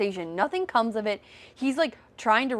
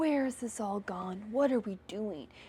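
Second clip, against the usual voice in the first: mocking put-on philosophical tone, quieter; 7 dB quieter than usual. Retelling a scene, mocking a character trying to sound philosophical. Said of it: "trying to be, like, all philosophical".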